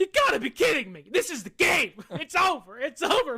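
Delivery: play-acted worked-up, animated, high swooping exclamation. Retelling own reaction on the couch to a play: retelling an animated outburst. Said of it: "Why are you getting so animated?".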